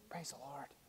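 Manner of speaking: very soft, quiet, restrained, hushed murmur. Saying Baptists like to praise but do it quietly: said very quietly. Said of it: "we do it very quietly".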